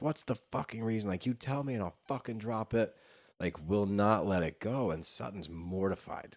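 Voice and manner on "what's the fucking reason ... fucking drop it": fast, pressing, confrontational outburst. Retelling a blowout where Rinna screams at Sutton, mock-screaming as Rinna. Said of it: "Rinna is screaming at her".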